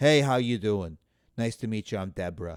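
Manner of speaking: put-on woman's voice with Long Island accent. Describing women from Long Island, imitating their greetings in a low-voiced Long Island accent. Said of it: "But they got low voices. They're down here".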